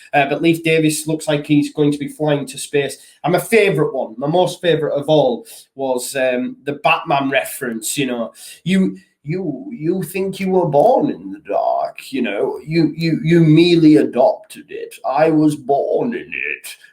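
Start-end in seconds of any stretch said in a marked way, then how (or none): 8.6-16.7 villain voice, sing-song, pitch swooping through every phrase. Quoting the Batman reference in a Bane impression. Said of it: "That's my best Bane impression".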